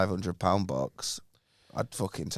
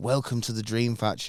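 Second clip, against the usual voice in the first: normal talking voice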